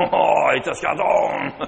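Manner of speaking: creaky mock French accent.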